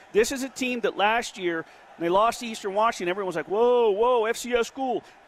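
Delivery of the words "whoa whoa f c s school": usual speaking voice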